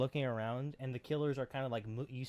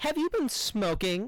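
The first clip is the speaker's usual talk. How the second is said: very high, loud, snooty, dismissive, pretentious voice; 10 semitones higher, 8 dB louder than usual. Retelling how a boyfriend dismisses his girlfriend: imitating a pretentious voice. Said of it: "In his little, uh, pretentious voice".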